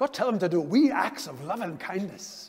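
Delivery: put-on spoken with a Scottish accent. Speaker repeats God's message to tell them, as God in a Scottish accent. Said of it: "I didn't know God had a Scottish accent".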